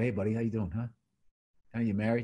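hushed, brought way down, low and quick. Describing a screaming comedian who then went all the way down, retelling dropping way down. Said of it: "he went all the way down and was starting to go".

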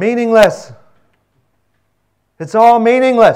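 very loud, high pulpit proclaiming voice. Speaker retelling how a preacher began after praying, retelling a very loud voice. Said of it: "he said in a very loud voice".

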